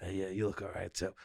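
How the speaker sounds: under-the-breath aside. Retelling offhand compliments at an event, imitating a lowered voice. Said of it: "when they lower their voice to say it".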